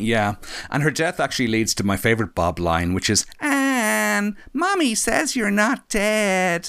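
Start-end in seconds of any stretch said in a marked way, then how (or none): 3.4-6.7 put-on very high, slow, drawn-out little-boy voice, Anne stretched. Quoting a favorite line from the film, high Bob voice. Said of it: "I can't go as high as Bob".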